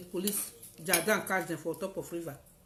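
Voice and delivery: ordinary delivery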